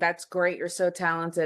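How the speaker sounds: play-acted sarcasm laid on as thick as possible. Speaker acts out what you could say to their brother, imitating a very sarcastic tone. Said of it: "in the most sarcastic tone".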